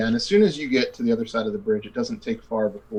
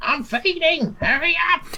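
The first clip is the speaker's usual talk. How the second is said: put-on very high, slow, drawn-out grandmother voice. Voicing the grandmother in the player's head, urging haste: grandmother's voice. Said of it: "you hear your grandmother's voice".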